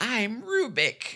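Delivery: squeaky, very high little voice. Recounting a show's bad guy and mimicking how he talks: squeaky Rubik voice. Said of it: "that squeaky little voice".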